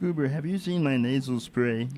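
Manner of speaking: talking right through the nose. Friends joke about an old TV character's voice; nasal, through the nose. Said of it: "talk through his nose kind of thing".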